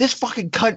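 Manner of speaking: full-throated loud yell, high and swooping. Retelling what a woman said after a camera flash blinded her in the theater, retelling her loud yell. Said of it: "She yelled it like like loud".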